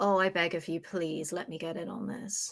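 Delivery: low, hushed half-whisper. Acting out a scene, the speaker speaks privately to Ben: half-whispering. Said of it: "and I whisper to him and I go".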